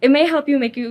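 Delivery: plain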